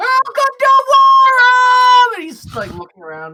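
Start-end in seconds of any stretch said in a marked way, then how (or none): 0.0-2.1 very high, very loud shrieking scream, one word stretched out. A character looking around, welcoming arrivals, screaming. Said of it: "just screaming".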